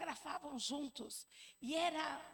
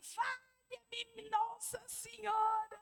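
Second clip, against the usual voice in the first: mock panicked, fearful, high-pitched scream; 8 semitones higher, 3 dB louder than usual. Retelling a plane scare, imitating someone screaming in fear. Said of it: "ele começou a gritar também".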